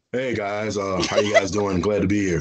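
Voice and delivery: settled, relaxed tone. A guest redoes an introduction after the voice went up, redoing the greeting without the voice going up. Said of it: "Let me redo that".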